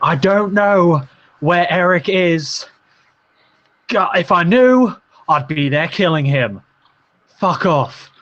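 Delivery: high, drawn-out scream of fed-up frustration. Voicing a frustrated character heard arguing downstairs: screaming in frustration. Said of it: "You just hear him screaming".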